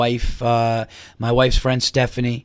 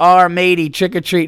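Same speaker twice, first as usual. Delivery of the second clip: put-on hurried delivery, higher and louder; 7 semitones higher, 6 dB louder than usual. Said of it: "as his hand hit the door".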